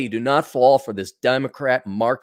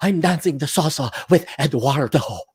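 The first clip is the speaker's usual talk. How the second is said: put-on, fake Latin accent. Mimicking women at salsa dancing, the speaker does a fake latin accent. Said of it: "they they do the Latin accent".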